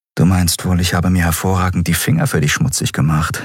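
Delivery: ordinary delivery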